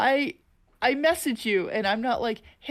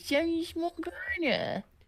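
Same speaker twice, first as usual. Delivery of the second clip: put-on little guy voice, pitched much higher; 6 semitones higher, 5 dB quieter than usual. Chatting with a co-host, doing the Morgana little guy voice. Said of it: "Cause you got the little guy voice".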